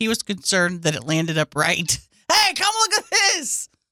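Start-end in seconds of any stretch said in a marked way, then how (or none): 2.3-3.6 high-pitched scream. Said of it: "like, screamed".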